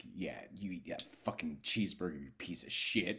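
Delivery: low, hushed, cruel and mean voice. Describing a show's opening drive-thru scene, imitating a mean inner voice. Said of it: "There is a very mean inner voice".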